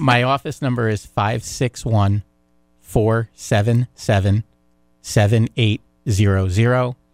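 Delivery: deliberately very slow delivery. Giving an office phone number over the air, speaking very slowly. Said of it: "I'll speak very slowly".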